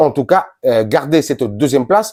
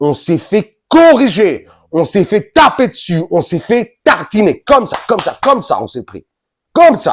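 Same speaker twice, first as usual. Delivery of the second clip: very angry, close to losing it, higher; 5 semitones higher than usual. Reacting to the team's heavy defeat: furious, close to losing it. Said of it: "Tellement je suis énervé".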